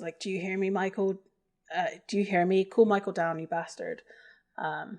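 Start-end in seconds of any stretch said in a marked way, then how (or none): none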